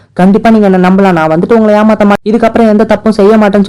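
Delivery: ordinary delivery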